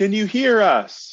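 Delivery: shouting loudly. Playing a character who cups his hands and yells for lost friends: yelling names in the cave. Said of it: "and just yells".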